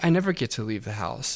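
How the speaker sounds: put-on sorrowful, really sad, mopey voice. Retelling a game character's line about never leaving: imitating a really sad delivery. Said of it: "she said it, like, really sad".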